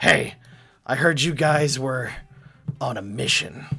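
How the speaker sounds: rough, gruff man's voice. Narrating a man who approaches the players and speaks, gruff man's voice. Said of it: "in a voice not quite as handsome as uh, ... but just as gruff".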